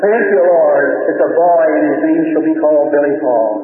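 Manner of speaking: ordinary talk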